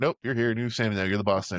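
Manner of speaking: put-on dismissive elf voice. Retelling how the elves greet the new Santa: imitating dismissive elves. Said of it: "They're just like".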